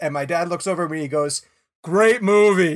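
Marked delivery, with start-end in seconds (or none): 1.8-2.8 acted, booming, full-volume voice. Retelling a parent's remark in a quiet theater: imitating dad saying it loudly. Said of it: "as loud as he can say it".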